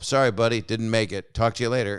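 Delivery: ordinary talk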